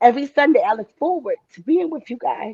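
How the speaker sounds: voice catching, choked-up, close to crying. Speaker thanking the people they meet every Sunday, about to cry. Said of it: "I'm about to cry".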